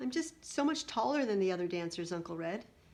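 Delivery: ordinary delivery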